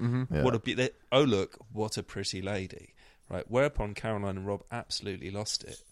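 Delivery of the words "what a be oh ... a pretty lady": ordinary delivery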